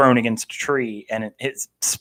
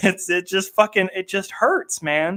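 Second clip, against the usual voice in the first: tearful, choked-up, high-pitched, near crying; 9 semitones higher, 3 dB quieter than usual. Talking about a sad chapter he bawled over, tearing up. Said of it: "he's actually tearing up right now".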